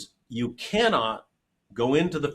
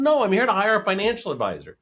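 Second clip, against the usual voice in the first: mock, a little annoyed, mildly irritated, pitched up; 7 semitones higher, 3 dB louder than usual. Retelling a client's reply in a meeting: imitating an irritated client. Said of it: "he got a little irritated".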